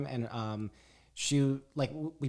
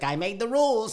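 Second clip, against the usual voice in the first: New York guy voice, higher and louder; 8 semitones higher, 5 dB louder than usual. Picturing God as a dude from New York: God as a New York dude.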